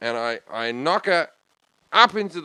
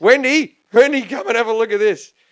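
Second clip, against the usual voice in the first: put-on drunk man voice, higher and louder; 9 semitones higher, 7 dB louder than usual. Retelling what a drunk man said on seeing the scene: imitating drunk Steve. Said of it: "He's leathered".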